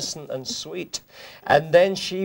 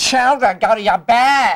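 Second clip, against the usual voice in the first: put-on, loud, pitched-up American accent, called out; 6 semitones higher, 7 dB louder than usual. Speaker tries again quoting Miss Hannigan, now in an American accent. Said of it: "But of course with an American accent".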